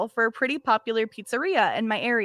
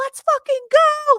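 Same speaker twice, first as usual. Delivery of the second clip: shrill, very high, excited screaming; 8 dB louder than usual. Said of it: "she's screaming".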